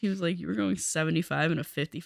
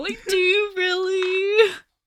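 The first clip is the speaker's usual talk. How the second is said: sobbing, tearful, very high-pitched voice; 13 semitones higher, 3 dB louder than usual. Retelling their reply to the man giving them a ticket, retelling crying while pleading. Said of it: "I'm like crying".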